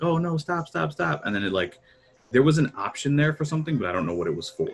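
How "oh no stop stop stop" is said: very high, desperate, frantic pleading tone. Player recalling the last one alive as he ran at her, imitating her begging. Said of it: "she was kind of like begging".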